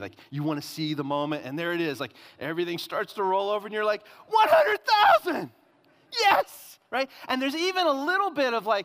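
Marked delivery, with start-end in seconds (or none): 4.3-6.8 very high, very loud, thrilled whooping cheer. Describing watching the odometer roll over, acting out excitement. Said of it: "you're getting all excited".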